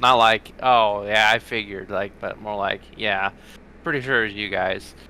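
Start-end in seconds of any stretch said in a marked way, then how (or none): 3.0-4.9 soft, casual, unbothered, offhand nonchalant tone. Speaker acting out what a man said to them, retelling a nonchalant reply. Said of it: "he says that, like, nonchalantly".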